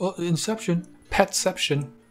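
high, dopey put-on dumb-person voice. Imitating people who keep calling things inception, dumb person impression. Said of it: "that's my dumb person impression".

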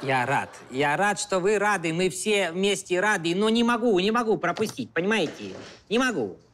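put-on Georgian accent.

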